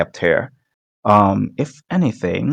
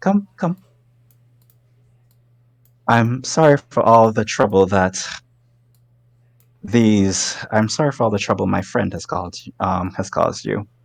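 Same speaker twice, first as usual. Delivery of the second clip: fey queen character voice. Voicing the Owl Queen, a fey lady who welcomes the players: voicing the Owl Queen. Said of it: "she basically gestures forward, drinking tea, just be like".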